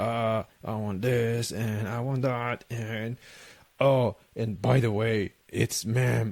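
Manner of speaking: deep, drawn-out voice easily taken for a man's. Retelling a woman's reply after mistaking her for a man, imitating her deep voice. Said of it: "like deep voice".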